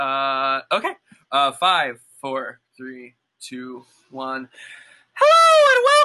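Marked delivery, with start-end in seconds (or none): 5.1-6.1 very loud, very high, booming theatrical stage projection. Opening a podcast recording with a welcome; theater voice. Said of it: "I don't know why I'm using that voice".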